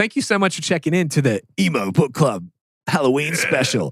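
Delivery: radio announcer voice. Closing the emo book club halloween special for listeners, radio voice. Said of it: "I was doing a radio voice".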